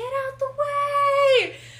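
very loud, very high, stretched-out shrill holler. Speaker retells a man as their balloon is dragged along: retelling a yell. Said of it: "he's yelling".

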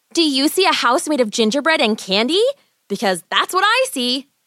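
eager, thrilled, excited delivery. Waking to see a house of gingerbread and candy, Gretel replies excitedly to Hansel. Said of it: "Gretel replied excitedly".

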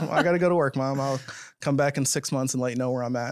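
ordinary delivery

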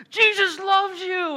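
very loud, high-pitched, shrill yelling. Retelling how he yelled at people by the santa line: imitating someone yelling. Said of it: "he's yelling at people like".

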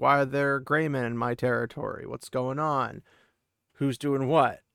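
ordinary talk, nothing marked

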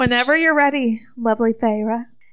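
drawling voice, every vowel stretched. Narrating a story, voicing the queen addressing Pharaoh: Amarantha's drawl. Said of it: "Amarantha drawled".

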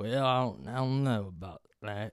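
slow, drawn-out put-on Southern accent. Mocking people from home who put on a slow Southern drawl. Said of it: "slow Southern drawl out of nowhere".

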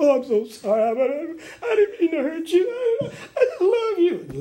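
phony apologetic voice, loud, high. Retelling a false apology to David, imitating Saul's loud fake apology. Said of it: "Saul lifted his voice and went".

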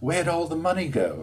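put-on high-pitched, very strong, thick English accent. Retelling the mother's accusation about money: imitating mother's strong English accent. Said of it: "very strong English accent".

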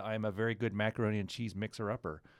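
ordinary talk, nothing marked

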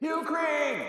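mock, very high-pitched yelling shout. Retelling a film scene where a character calls out a name: imitating someone yelling. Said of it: "She just starts yelling it out".

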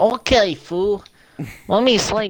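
fake Mexican accent voice. Doing a Mexican version of a character voice: Mexican version of Vinny Luco voice. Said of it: "That is the Mexican version of Vinny Luco".

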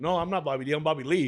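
usual speaking voice

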